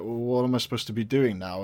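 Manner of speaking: ordinary talk, nothing marked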